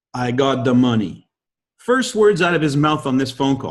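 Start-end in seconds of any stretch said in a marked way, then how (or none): 0.1-1.2 put-on French-Canadian accented speech. Retelling a phone call from a man in Montreal: thick French-Canadian accent. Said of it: "French-Canadian accent says".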